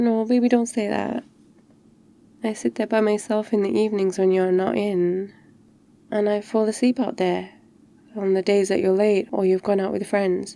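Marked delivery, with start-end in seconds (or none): 0.0-1.2 sulky, pouting, pleading tone. Getting into bed, reacting to being told something made up to scare: pouty.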